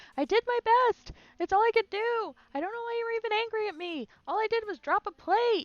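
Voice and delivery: yelled, very high-pitched and loud. Describing a man being verbally abused, acting out him shouting back. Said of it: "he's shouting back like".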